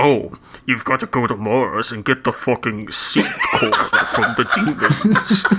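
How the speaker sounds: swooping, pitch-swinging game-character voice. Speaker recalling a character from a game he played long ago, Samuel Hayden impression. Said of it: "best impression of like his voice".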